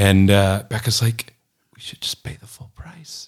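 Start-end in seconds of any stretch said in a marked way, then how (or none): 1.8-3.3 hushed whispered mutter under the breath, barely audible. Speaker recounts Becca's aside during the car negotiation: retelling a mutter under breath. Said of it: "under her breath".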